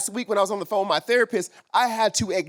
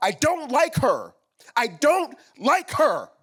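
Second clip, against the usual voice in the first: acted, high-pitched, distraught, breaking-down voice; 5 semitones higher than usual. Recalling being asked how they felt about their mom, reenacting an emotional breakdown. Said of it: "I had this physical emotional breakdown".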